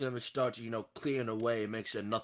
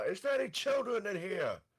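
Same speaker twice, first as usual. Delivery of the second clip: high, swooping yell, called out at distance; 9 semitones higher than usual. Calling down a hospital hall to the nurse in character: yelling down the hall. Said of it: "I yell from across down the hall".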